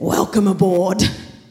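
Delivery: put-on smoky voice. Retelling what a woman said while grasping a man's hand, imitating her smoky voice. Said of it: "in her very smoky voice".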